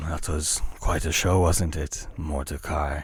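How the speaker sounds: speaking in a hushed, low tone. A hooded figure steps up beside the player at a market vendor, in a hushed tone. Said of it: "says in a hushed uh, tone".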